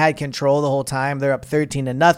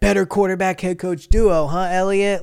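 light, joking, teasing called-out voice; 4 semitones higher than usual. A reporter waiting in the tunnel recalls a man yelling at him, retelling a yell. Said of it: "and he yells".

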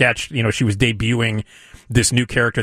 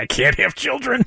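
very high voice cracking into laughter; 13 semitones higher than usual. Retelling a cast member's line from a sketch, imitating someone breaking into laughter. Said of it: "And then she starts laughing".

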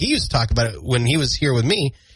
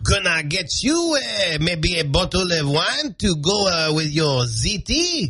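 put-on French accent, higher and slower; 4 semitones higher than usual. Playing a waiter in a comedy bit, doing a Pepe Le Pew French accent. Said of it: "very Pepe Le Pew".

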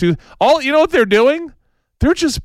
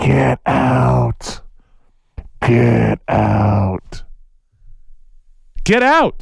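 very low, creaky, nasty, drawn-out, unfriendly voice; 7 semitones lower than usual. Recalling a movie scene where the house speaks, imitating a not-nice house voice. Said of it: "in a not very nice voice go".

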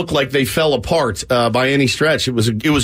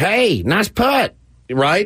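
high, drawn-out cornpone hillbilly drawl; 5 semitones higher than usual. Host recalls mimicking a buddy on the air; Foster's hillbilly voice. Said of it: "imitate our buddy Foster's hillbilly voice".

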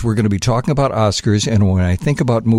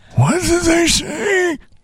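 put-on very high, drawn-out, slow old man voice. Recording a requested voice line, second take, in an old man voice. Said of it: "I'm going to do a couple old man voice things".

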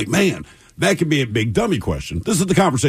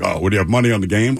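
put-on joking, jokey tone; 2 semitones lower than usual. Retelling what a man at the end of the bar asked, retelling a joking question. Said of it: "he kind of jokingly".

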